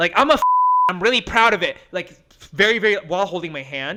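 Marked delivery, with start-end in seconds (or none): 0.2-1.8 mock, loud, pitched-up announcing voice. Retelling a date's words in a public bar: imitating someone talking loudly. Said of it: "he would say that very loudly".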